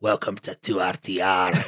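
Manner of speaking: heavy Scottish brogue, deep, slow, very drawn-out. Retelling a sergeant's parting words to the new lads, strong Scottish accent. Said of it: "his strong Scottish accent".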